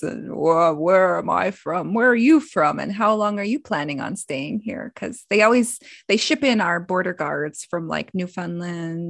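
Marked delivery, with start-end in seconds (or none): 0.3-4.9 put-on big, deep voice. Retelling a border question in grandpa's manner: imitating grandpa's big, deep voice. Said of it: "he always had this big, deep voice".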